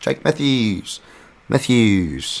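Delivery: bad put-on Australian accent. Previewing the next fight, the speaker says a fighter's name in a terrible Australian accent. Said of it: "terrible Australian accent there".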